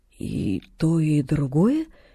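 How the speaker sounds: very slow, low, stunned, dazed voice. A sick woman, offered chicken by a girl, asks her question slowly. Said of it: "медленно проговорила она".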